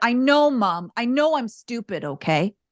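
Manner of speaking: put-on child's voice, tearful, speaking through tears. Retelling what a child said after being yelled at: imitating a tearful child. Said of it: "he looked at me with tears in his eyes".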